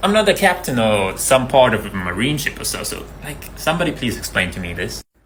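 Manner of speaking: plain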